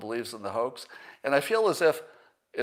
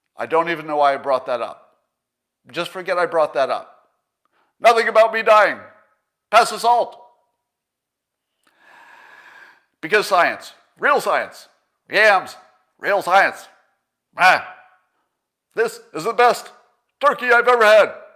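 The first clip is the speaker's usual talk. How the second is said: very loud, angry, pitched-up ranting shout; 8 semitones higher, 12 dB louder than usual. Show listeners Joe Biden at holiday dinner, in a mock-angry Joe Biden impression. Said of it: "my impression of angry Joe Biden".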